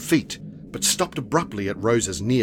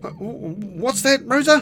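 tossed-back delivery, much higher, louder, slower; 5 dB louder than usual. Oscar, busy, answers his sister rosa's yelled question, thrown back reply. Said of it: "Oscar threw back".

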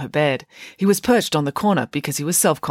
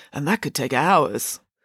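ordinary delivery

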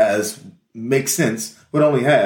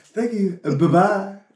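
polite, put-on telephone voice; 10 semitones higher than usual. Imitating how everybody talks on the phone, in a put-on phone voice. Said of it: "everybody gotta have their phone voice".

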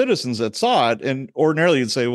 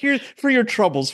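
put-on heavy, thick Irish accent, pitched very high; 11 semitones higher than usual. Retelling grandma handing cops bills in a courtroom: Mrs. McKay's thick Irish accent. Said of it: "real thick Irish accent".

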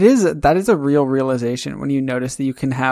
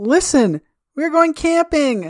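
very high, bursting with excitement, exclaiming; 13 semitones higher than usual. Describing a scene, the speaker voices the mother walking in: acting out excited exclaiming. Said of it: "excitedly exclaiming".

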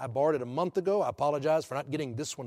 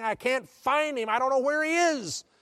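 put-on shrill, very high, screaming cry; 10 semitones higher, 4 dB louder than usual. Retelling a rescuer coming up from a murky pond: retelling a scream. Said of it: "he was screaming".

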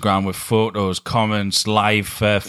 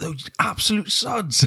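put-on radio presenter voice, East End accent, higher; 11 semitones higher, 3 dB quieter than usual. Imitating how a rival would react to the news: Matt Sprackman impression. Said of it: "That's my impression of Matt Sprackman".

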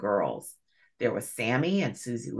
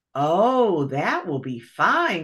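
drawn-out, delighted, glad exclamation; 6 semitones higher, 5 dB louder than usual. The muskrat lady replies to the bunny uncle about their summer plans, crying out. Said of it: "cried Miss Fuzzy Wuzzy".

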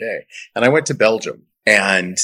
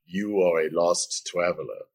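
put-on sultry German-accented voice, quieter; 2 semitones lower, 7 dB quieter than usual. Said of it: "her best [name] accent".

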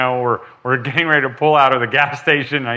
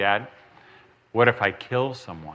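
mock-serious tone, lower, quieter, slower; 6 semitones lower, 8 dB quieter than usual. Father retells his young son's question to him: imitating son trying to sound serious. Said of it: "and he'd try to get serious".

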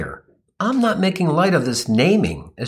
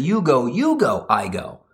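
rude, with I go dropped low at the end. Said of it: "This bozo doubled up".

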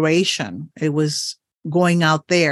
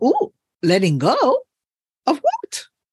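very high, fast rising voice. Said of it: "And your voice goes up".

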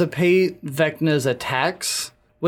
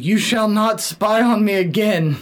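mild, half-shouted, high-pitched yell; 5 semitones higher than usual. Retelling how Cass attacked Vecna: imitating Cass yelling. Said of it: "yells at him".

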